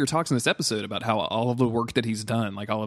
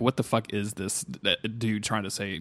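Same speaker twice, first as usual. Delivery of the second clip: plain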